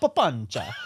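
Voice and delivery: loud Italian accent. Saying a pali word the way it sounds in his head, in an italian accent. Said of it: "when I say it in my head in an Italian accent, it's hilarious".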